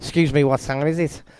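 terrible attempt at a Scouse Liverpool accent. Quoting a young guy who came up to ask, bad scouse liverpool accent. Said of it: "in a Scouse Liverpool accent ... That was a terrible impersonation of it".

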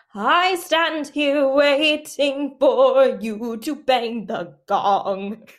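high, very slow, drawn-out delivery. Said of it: "I do a really good impre-, impression".

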